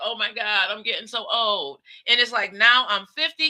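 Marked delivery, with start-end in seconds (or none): 0.0-1.8 acted weepy, sobbing, tearful crying voice. Retelling crying in bed on turning twenty-five: imitating own past crying. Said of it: "just crying like".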